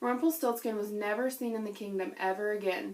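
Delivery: plain reading voice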